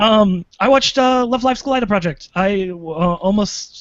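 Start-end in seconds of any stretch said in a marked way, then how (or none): 1.3-2.3 words bunched in a quick, slightly high run. Naming the last anime just watched: said quickly. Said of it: "You said it quickly".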